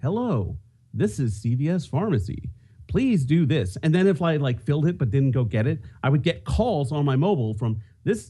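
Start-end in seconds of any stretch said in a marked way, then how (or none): 0.0-3.8 pleasant, polite, slow automated phone voice. Describing calling in a prescription, imitating the pleasant CVS Pharmacy phone voice. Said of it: "this very pleasant voice going".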